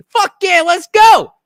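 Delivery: acted New Jersey man voice. Retelling how a candidate talks, imitating Ciattarelli as typical Jersey guy. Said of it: "he's such a typical, like, Jersey".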